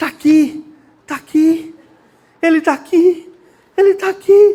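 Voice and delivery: crying, slow and tearful, words drawn out. Retelling a story about a pastor who lost his sermon: imitating a pastor crying. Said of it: "E ele começou a chorar".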